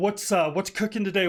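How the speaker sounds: ordinary delivery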